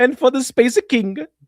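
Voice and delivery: accent from the Middle East. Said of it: "my Middle Eastern accent?".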